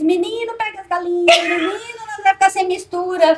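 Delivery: loud, high-pitched shouting. Retelling a family story where chickens escaped at the cemetery: imitating mother shouting. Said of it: "a minha mãe gritando".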